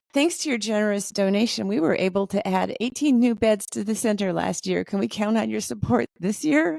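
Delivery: put-on, upbeat, bright, cheerful telemarketer voice. Retelling a phone call from a cancer care center: imitating a cheerful voice. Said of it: "this cheerful voice says".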